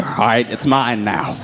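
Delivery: ordinary talk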